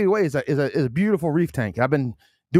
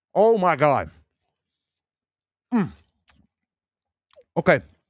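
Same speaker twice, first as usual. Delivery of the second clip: slow speech mushed through a mouthful of food. Taste testing a pizza on the air, talking with mouth full. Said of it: "Sorry about talking with my mouth full".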